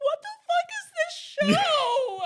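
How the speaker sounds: mock crying, very loud and high sobbing wail. Retelling how she reacted to a show's last episodes, imitating someone sobbing. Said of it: "she's just sobbing and I'm crying".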